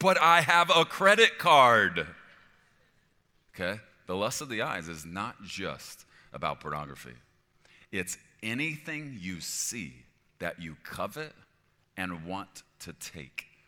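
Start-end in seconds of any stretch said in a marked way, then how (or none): 0.0-2.1 very loud, drawn-out voice. Acting out a loud inner voice that answers the warning: really loud inner voice. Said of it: "that really loud voice on the inside".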